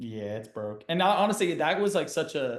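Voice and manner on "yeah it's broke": quiet, super calm, totally unbothered. Retelling own reaction to an injury, retelling being super calm. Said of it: "I remember being super calm".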